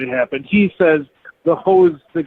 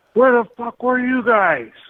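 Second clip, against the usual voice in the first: high, yelled voice; 8 semitones higher than usual. Retelling someone soaking wet yelling up from the boat: imitating someone yelling. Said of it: "And he yells up".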